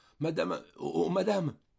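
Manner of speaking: frantic stammering with very high voice. On a train, a man holds a terrified woman back by her skirt, stammering. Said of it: "la retenait par sa jupe en bégayant".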